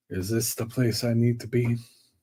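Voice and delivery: quiet, hushed muttering to oneself under the breath. Voicing a character walking up to a tall door: muttering under his breath. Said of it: "is saying sort of under his breath".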